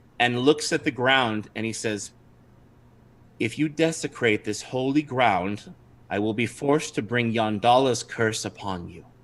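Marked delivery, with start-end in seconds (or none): 3.4-9.0 quiet, calm, steady, sad delivery. Narrating a scene, the storyteller voices a halfling speaking up, calm, quiet voice. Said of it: "speaks up in a somewhat calm and quiet voice".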